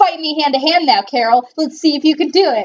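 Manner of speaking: mock smarmy taunting tone. Retelling how the villain challenges carol to fight: imitating a smarmy taunt. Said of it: "Totally smarmy".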